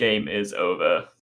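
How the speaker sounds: low-pitched robotic machine voice. Voicing what the game says when it ends, in a robot voice. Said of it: "just in a robot voice?".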